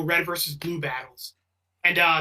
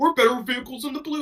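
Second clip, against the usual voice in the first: put-on, high-pitched Southern drawl; 7 semitones higher than usual. Retelling a scene where a character imitates Sarge: Sarge impression, Southern accent. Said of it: "like he's doing like like the Southern accent".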